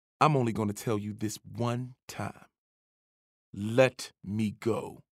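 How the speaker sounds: hard, flat, threatening monotone delivery. A coach, grabbed by the shirt by the narrator, answers: flat, hard, scary. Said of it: "His voice was flat, hard, scary".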